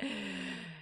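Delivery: plain reading voice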